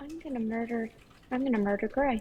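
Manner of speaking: muttering under her breath. Voicing a character holding back anger: muttering under her breath. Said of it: "absolutely under her breath".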